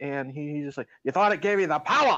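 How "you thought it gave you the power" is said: exaggerated, over-the-top sheriff accent. Retelling a movie sheriff's over-the-top interrogation: imitating the sheriff's accent. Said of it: "he's got such that, that accent".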